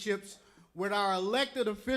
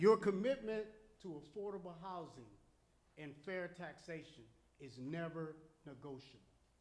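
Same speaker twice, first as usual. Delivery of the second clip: low, slow, deliberate, very quiet delivery; 6 semitones lower, 12 dB quieter than usual. Giving a response on behalf of these folks, speaking low and slowly. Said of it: "and I'll speak low, slowly".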